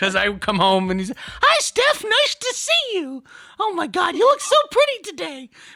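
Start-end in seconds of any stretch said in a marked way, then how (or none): 1.2-5.5 very high-pitched, slow delivery. Imitating her boyfriend greeting her when she comes home, Mickey Mouse voice. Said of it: "Like I'm freaking dating Mickey Mouse over here".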